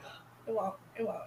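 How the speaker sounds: very soft, hushed coaxing tone.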